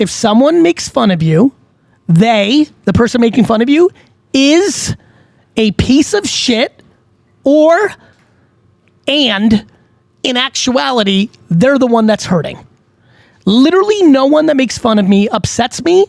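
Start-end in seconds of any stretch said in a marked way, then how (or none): 0.0-6.8 slow, deliberate, each word laid out with care. Talking about people who mock accents, slow deliberate delivery. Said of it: "I'm gonna say this slow".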